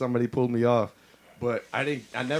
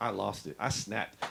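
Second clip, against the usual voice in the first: usual speaking voice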